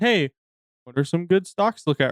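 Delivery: ordinary delivery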